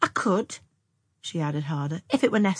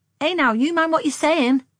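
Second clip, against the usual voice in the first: very high, loud, scolding, admonishing cry; 10 semitones higher, 6 dB louder than usual. A woman scolds a young man for a clumsy hint, crying out admonishingly. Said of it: "cried Anne".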